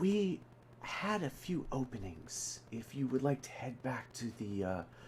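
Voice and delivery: discreet, hushed, quiet half-whisper. A waitress taps a guest's shoulder and speaks to him, in a low half-whisper. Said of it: "just kind of like in a low whisper".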